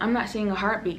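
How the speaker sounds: ordinary talk, nothing marked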